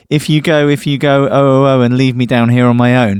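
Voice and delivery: plain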